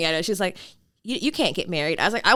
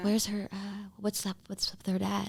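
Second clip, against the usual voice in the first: put-on whisper, much quieter; 10 dB quieter than usual. Imitating how other people ask them such questions, in a mock whisper. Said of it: "and then they whisper it".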